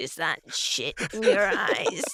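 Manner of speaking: put-on creepy cartoon character voice. Joking about the game, imitating Salad Fingers: Salad Fingers voice. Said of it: "salad fingers would go".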